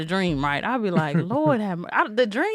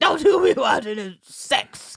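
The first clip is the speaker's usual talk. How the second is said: stern, fatherly scolding voice; 3 semitones higher than usual. Retelling a dad catching a kid watching a show: imitating dad scolding. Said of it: "My dad was like".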